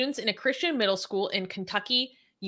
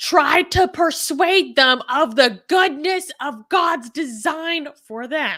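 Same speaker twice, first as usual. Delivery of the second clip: very loud, slow, high, drawn-out yelling; 5 semitones higher, 9 dB louder than usual. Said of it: "Why are you yelling this part out?".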